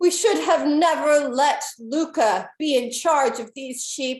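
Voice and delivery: high-pitched shouted yell. A storyteller voices a shout from the back of a tense mob, Anna yelling from the crowd. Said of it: "and it yells".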